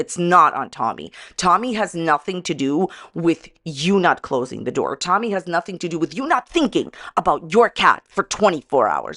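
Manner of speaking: getting upset, emotion audibly building. Blaming someone for leaving the door open on a missing cat: getting upset. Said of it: "you can see I'm getting upset".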